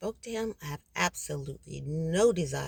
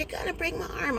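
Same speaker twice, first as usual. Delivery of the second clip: very high, rushed screaming; 11 semitones higher than usual. Retelling being pinned down with an arm bent backwards, retelling a scream. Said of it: "I was screaming".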